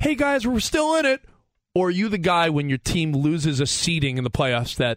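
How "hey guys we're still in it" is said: relentlessly upbeat, overly positive, pitched-up voice. Imitating a fan after the team loses: imitating an overly positive fan. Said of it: "the overly positive".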